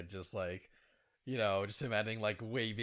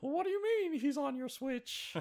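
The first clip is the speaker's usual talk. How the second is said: very high-pitched, cartoonish character voice. Joking that someone dressed as Mickey takes Switches: Mickey voice sounding like Gingerbread Man. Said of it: "I'm starting to sound like the, like the gingerbread man from Shrek".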